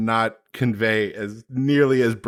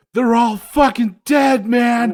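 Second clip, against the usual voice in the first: mock breathless ugly sobbing, higher and louder; 13 semitones higher, 6 dB louder than usual. Retelling how a father broke down after a reunion: imitating someone ugly crying. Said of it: "saw my dad ugly cry".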